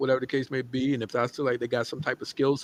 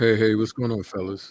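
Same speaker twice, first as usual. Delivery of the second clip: formal-sounding, lower pitch; 3 semitones lower than usual. Greeting the others on joining the call, sounding distinguished. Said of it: "you sound real distinguished right now".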